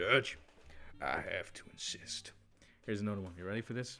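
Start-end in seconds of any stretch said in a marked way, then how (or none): 0.0-2.3 slow, proper character voice. Showing a better impression than in an interview: proper Arthur Morgan voice. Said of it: "the proper Arthur Morgan".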